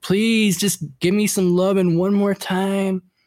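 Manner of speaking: high, wheedling, whiny, begging tone. Retelling how grandpa begged grandma, imitating grandpa's whining plea. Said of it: "grandpa like whining".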